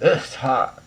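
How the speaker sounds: said with disgust. Showing a tone someone might use to say it's hot, disgusted tone. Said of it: "Were you saying it with disgust?".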